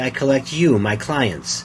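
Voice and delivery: ordinary talk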